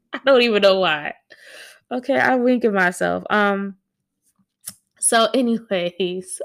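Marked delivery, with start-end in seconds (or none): 0.1-3.2 giggly, cracking-up, laughing through the words. Admitting to winking at oneself in the mirror, laughing while talking. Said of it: "I gotta stop laughing at myself".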